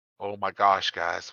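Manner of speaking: soft, desperate, at a total loss. A player voices Ralph looking around the dark diner, desperate. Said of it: "Ralph looks around desperately".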